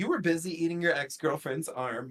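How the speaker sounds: ordinary talk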